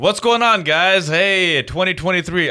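high-pitched, hyped-up club DJ voice. Greeting listeners again after being told to match the energy: put-on strip club DJ voice. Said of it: "I feel like a strip club, uh, D J".

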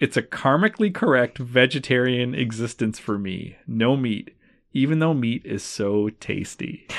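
ordinary talk, nothing marked

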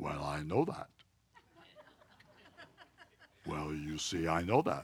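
very deep, lofty, swooping know-it-all voice. Speaker imitates a know-it-all missionary he knew, imitating a deep voice. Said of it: "he had this real deep voice".

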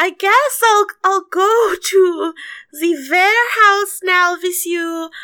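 really loud voice. She speaks up hoping Vasily hears, saying it really loud. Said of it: "really loud".

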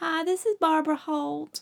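high, bad Southern accent.

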